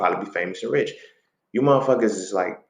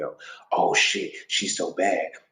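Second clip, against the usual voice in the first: slow, breathy, whispered lusting awe; 3 semitones lower, 5 dB quieter than usual. Explaining the silhouette challenge, imitating lustful guys reacting to it. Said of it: "I'm speaking as the motherfuckers who's like".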